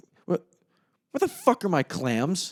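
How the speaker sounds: high, swooping, confused and disgusted outburst. Retelling a movie scene where a frantic kitchen expediter looks around: imitating confused, disgusted freak-out. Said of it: "the look on his face of just pure confusion and disgust".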